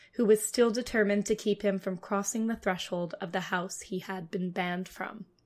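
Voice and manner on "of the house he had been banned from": normal talking voice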